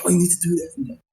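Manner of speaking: high, hyped-up, enthusiastic, eager voice. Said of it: "really enthusiastic and really hyped up about it".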